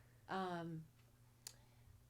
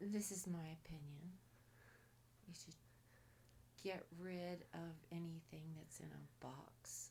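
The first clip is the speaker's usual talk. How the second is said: soft, unvoiced whisper. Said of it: "speak louder".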